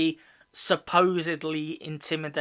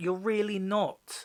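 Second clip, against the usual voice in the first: ordinary talk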